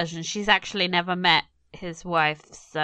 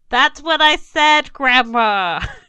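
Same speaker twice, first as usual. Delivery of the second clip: very loud, high raised voice; 8 semitones higher, 9 dB louder than usual. Commenting on a character, imitating his raised voice for old people: loud raised voice. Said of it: "that loud raised voice thing you do with the old people".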